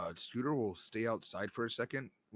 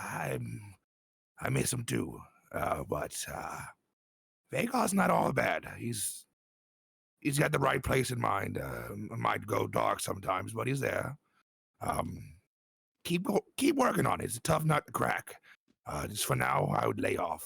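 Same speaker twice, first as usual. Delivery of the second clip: whispering very softly; 5 dB louder than usual. Voicing a character speaking privately to a companion: whispering very softly. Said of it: "he's gonna whisper very softly to him".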